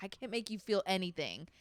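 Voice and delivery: sarcastic, jabbing tone. Retelling the line now thrown back at him in fights: imitating own sarcastic jab. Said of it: "really asshole, like, uh, like, sarcastic way".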